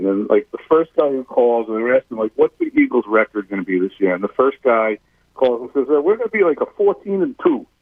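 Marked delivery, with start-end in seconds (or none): 5.9-7.6 put-on New York accent, much higher, slower. Retelling a caller to an Eagles pregame radio show, in a New York accent. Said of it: "or that's a New York accent".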